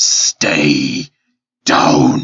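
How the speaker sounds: very low, loud, growling creature voice. Game master voicing a monster clawing a player's character, in a growling monster voice. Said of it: "and it growls".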